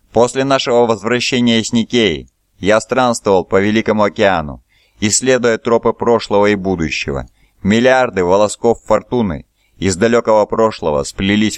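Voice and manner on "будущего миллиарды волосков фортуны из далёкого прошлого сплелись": ordinary delivery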